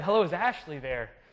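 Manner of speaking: plain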